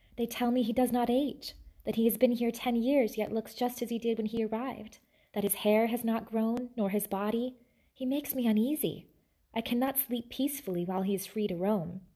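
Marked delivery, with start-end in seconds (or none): none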